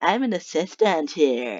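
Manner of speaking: slow, drawling, put-on stock valley-girl voice. Introducing a props assistant character, in the Britney voice. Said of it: "I like to call it the Britney voice".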